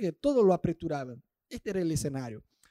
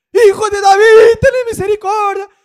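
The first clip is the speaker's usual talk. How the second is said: acted-out shout, higher and louder; 16 dB louder than usual. Retelling how the blind man cried out to Jesus: acting out a shout. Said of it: "el chabón empezó a gritar".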